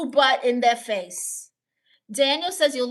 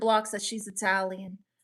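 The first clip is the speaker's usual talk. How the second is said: plain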